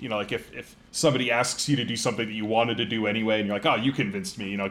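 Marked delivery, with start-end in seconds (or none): 3.6-4.5 jokingly, mock sarcastic tone. Showing how friends joke when asked to do something wanted anyway: jokingly sarcastic. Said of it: "kind of like sarcastically joke about it".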